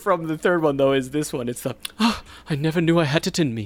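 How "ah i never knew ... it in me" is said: prim, fussy, mechanical robot butler voice. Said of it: "Three P O is such a good line".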